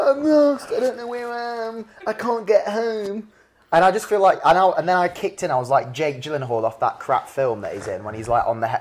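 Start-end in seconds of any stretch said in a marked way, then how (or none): 0.0-3.3 mock crying, higher. Recounting a 5 a.m. phone call from a lost woman, imitating her crying. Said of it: "She's crying".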